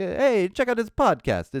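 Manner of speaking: put-on sudden Italian accent, pitched way up. Podcast host urging listeners to tell friends about the show: sudden Italian accent. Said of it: "I don't know why I had an Italian accent all of a sudden".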